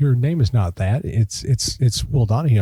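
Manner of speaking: ordinary delivery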